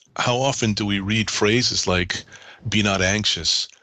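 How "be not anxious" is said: plain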